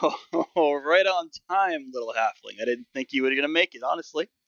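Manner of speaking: amused, chuckling, laughing through the words. Narrating as Benjamin greeting the halfling who rushes up, laughing as Benjamin. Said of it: "he laughs. Like".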